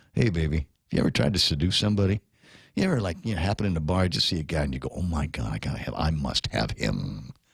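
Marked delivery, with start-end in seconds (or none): 5.0-7.3 very low, deep, demon-like voice. Speaker acts out spotting a guy in a bar, in a demonic voice. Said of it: "with that with that demonic voice".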